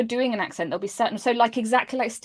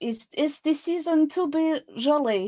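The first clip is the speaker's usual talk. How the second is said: put-on French accent from the back of the throat; 4 semitones higher than usual. Trying the same line again, a speaker delivers it in a french accent. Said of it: "but with a French accent".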